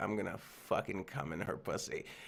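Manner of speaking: crude, hushed whisper under the breath. Retelling going over to Rory to say something: retelling a whisper. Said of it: "whisper to Rory".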